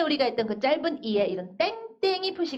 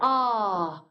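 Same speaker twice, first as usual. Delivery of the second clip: long drawn-out a, fading and dropping in pitch; 4 semitones lower than usual. Contrasting Korean with English, showing a held sound: long 'a' fading downward. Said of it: "하다가 숨이 차서 떨어져요, 소리가, 아래로".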